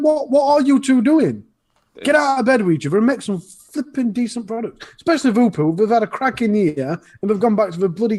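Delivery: fast, heated, worked-up ranting that runs away. Talking about new products, launching into heated ranting. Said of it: "I'm ranting like a Madanana".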